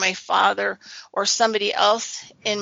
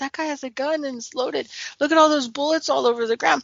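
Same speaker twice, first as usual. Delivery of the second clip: high, rushed, freaked-out, frightened, panicky voice; 5 semitones higher than usual. Recounting a gunman outside at night, quoting a friend, retelling a frightened friend. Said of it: "My friend was totally freaked out".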